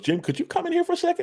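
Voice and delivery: very high, fast, sweet voice.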